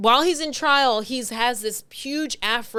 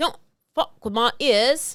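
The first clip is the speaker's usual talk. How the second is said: British accent impression. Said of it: "But he says it in a British accent".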